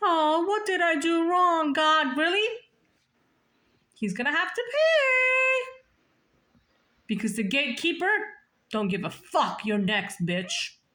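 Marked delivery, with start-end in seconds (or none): 0.0-2.2 slow, mopey, self-pitying put-on sad voice. Speaker mocks a man they call a coward, acting out his self-pity: mocking his sadness. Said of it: "So now he's all sad".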